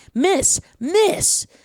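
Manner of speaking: high, mild mock shout of miss. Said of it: "She's shouting".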